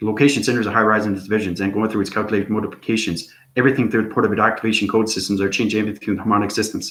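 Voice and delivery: extremely fast, rapid-fire torrent of words. Showing how fast one can talk: talking extremely fast. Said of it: "And I can talk extremely fast".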